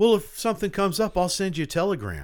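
snooty, condescending, swooping sing-song tone. Retelling a movie character's line: imitating a condescending tone. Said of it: "He says in a really condescending way".

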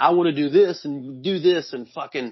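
usual speaking voice

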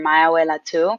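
ordinary delivery

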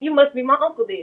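heated, defiant back-and-forth yelling. Retelling a back-and-forth that ended with him tackled, acting out his yelling. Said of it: "So now I'm like yelling at them".

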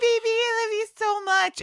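mock sweet lovey-dovey voice, high, sugary and cooing.

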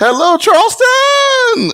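high-pitched yelp. Retelling a campaign rollout, doing a Tim Scott impression. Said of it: "I'm gonna do my best Tim Scott impression".

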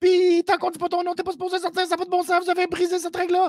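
very high, indignant, outraged ranting. Recounting a man who really lost it, the speaker does a retelling of an outraged rant. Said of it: "Il a vraiment pété une coche".

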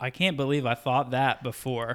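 usual speaking voice

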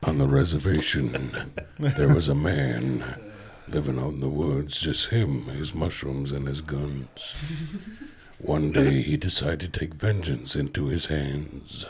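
low, movie-trailer villain narration voice. Narrating a made-up story for the group, in a bad guy voice. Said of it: "I provide the bad guy voice".

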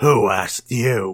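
snarled monster-like alien voice. The Devorian rebuffs a newcomer sneaking up between them, snarling. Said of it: "Devorian immediately snarls".

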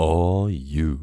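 deep, low, booming radio announcer voice. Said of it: "that radio voice".

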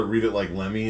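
ordinary talk

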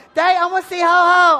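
very loud, high, whiny whining voice. A father imitates his young daughter, imitating a daughter's whining. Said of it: "whining about how she wanted to see Santa Claus".

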